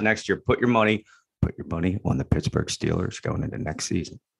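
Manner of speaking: joking conspiratorial whisper. Giving a betting tip to the other speaker, in a mock secret whisper. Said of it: "Thank you for whispering that".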